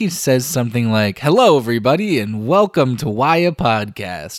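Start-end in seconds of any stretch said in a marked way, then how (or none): 1.2-4.4 play-acted lively, upbeat, energetic delivery. Imitating a cohost's usual podcast opening: energetic delivery. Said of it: "with, like, energy".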